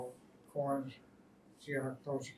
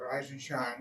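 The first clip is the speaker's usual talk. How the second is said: normal talking voice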